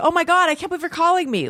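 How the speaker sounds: very high, starstruck, gushing superfan voice. Retelling how a reviewer answered a surprise phone call: imitating a starstruck fan. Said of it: "acted like a total fan".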